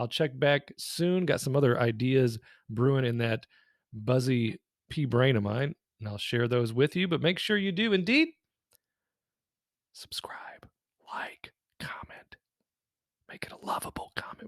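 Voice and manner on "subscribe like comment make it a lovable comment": breathy, hushed, very quiet, barely voiced whisper. A YouTuber closes a video asking viewers to subscribe, whispering. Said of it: "Why are you whispering?".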